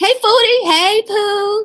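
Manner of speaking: very high-pitched voice. Showing listeners how she says her greeting, imitating how she says her greeting. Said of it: "That's how she says it".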